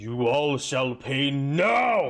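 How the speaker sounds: otherworldly possessed voice, drawn out. A game master voices a figure raising a staff, possessed voice, not his own. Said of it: "The voice coming out is not his own".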